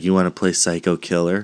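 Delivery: plain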